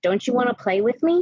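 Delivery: put-on eerie, creepy little girl voice. Retelling hearing a voice on walking through a locked back door, imitating a little girl's voice. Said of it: "this little girl's voice going".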